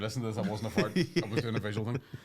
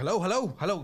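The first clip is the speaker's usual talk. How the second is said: panicked, frantic, pitched-up calling; 9 semitones higher, 4 dB louder than usual. Retelling a man grabbing the pilot's seat and headphones: mock-panicked frantic calls.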